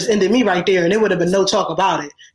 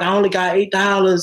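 normal talking voice

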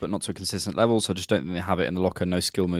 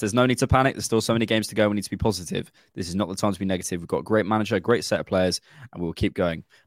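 ordinary delivery

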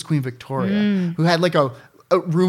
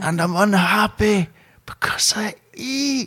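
drawn-out, slow, high Scottish drawl, character voice; 5 semitones higher than usual. Doing a requested impression for the others: Fat Bastard voice. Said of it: "Do a good fat bastard".

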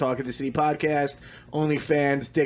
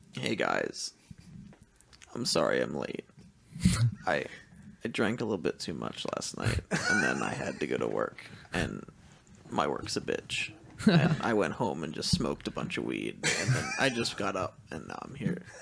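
put-on hungover voice with swooping pitch; 11 semitones lower, 7 dB quieter than usual. Doing an impression of a friend, Dick, sounding hungover: imitating Dick hungover. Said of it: "he does a good impression of me hungover".

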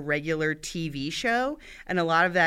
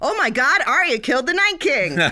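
very loud, high-pitched, excited yell; 9 semitones higher, 9 dB louder than usual. Recalling jumping up alone in the living room, retelling a very loud voice. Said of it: "said in a very loud voice all by myself".

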